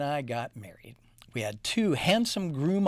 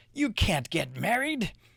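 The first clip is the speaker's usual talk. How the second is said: spooky, scary, menacing voice; 4 semitones higher than usual. Reading a story, the stink bug interrupts the friends' wedding: scary voice. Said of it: "said a scary voice".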